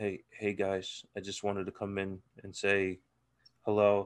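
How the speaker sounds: tiny, hushed half-whisper, barely audible. Streamer acts out JB joining late at night, imitating JB half-whispering. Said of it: "He's whispering like a fucking church mouse".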